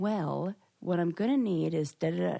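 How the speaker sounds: slow, deliberate, drawn-out, words spelled out. Retelling an appointment where a man explained things, mimicking a slow voice. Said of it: "in this slow voice".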